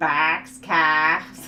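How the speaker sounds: loud voice with New England accent.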